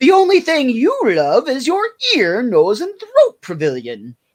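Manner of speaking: put-on high, swooping girly voice. Retelling a scene, Homer reads from the script in Homer's girly voice. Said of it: "Homer snaps out of doing his girly voice".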